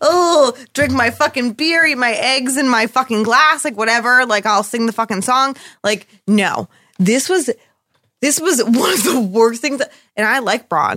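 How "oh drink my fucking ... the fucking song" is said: swaggering voice like a cartoon rogue. Mocking a character as a Disney rogue like Gaston: mocking Bronn as Gaston. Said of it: "He's like".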